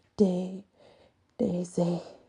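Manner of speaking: speaking between heavy gulps of air. Asked its name, an animal answers between heavy gulps of air: gasping for air. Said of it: "it's between heavy gulps of air".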